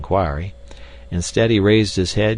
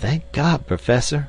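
earnest, devout, fervent, high-pitched stage whisper; 7 semitones higher than usual. Mr. Philander speaks to Professor Porter, who has just moved his leg, in a fervent whisper. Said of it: "whispered Mr. Philander fervently".

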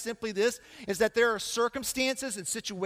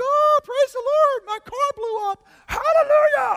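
shrill, loud, very high put-on voice; 9 dB louder than usual. Speaker acting out someone's mismatched reaction to a major crisis, in a mock high-octave voice. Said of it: "I go on a high octave like that".

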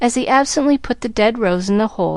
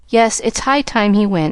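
ordinary delivery

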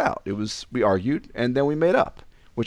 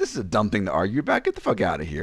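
normal talking voice

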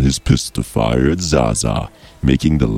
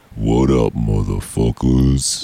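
put-on, fully menacing villain character voice; 2 semitones lower than usual. Speaker opens talk about an episode in a Death Gun voice. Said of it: "this week we're going to do like a Death Gun type voice... it's going to sound like this".

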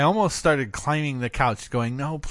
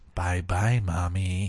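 imitated flat deadpan, lower and quieter; 9 semitones lower, 4 dB quieter than usual. Mother recalls her daughter waking her up, imitating a deadpan goodbye. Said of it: "It's the deadpan".

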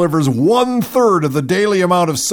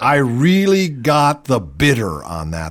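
ordinary talk

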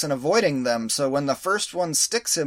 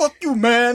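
put-on loud, angry Brooklyn accent, pitched up; 9 semitones higher, 7 dB louder than usual. Quoting a movie character whose brooklyn accent comes out: brooklyn accent. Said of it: "his Brooklyn does come out".

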